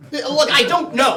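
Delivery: worked-up exasperated tone. A man looking for another man answers his companion, who urges calm; agitated. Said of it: "calm down".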